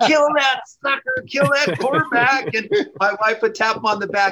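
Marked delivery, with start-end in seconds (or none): 0.1-2.5 high-pitched screaming of a crowd. Recalling celebrity fans in the stadium seats, retelling fans screaming. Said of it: "they were just screaming".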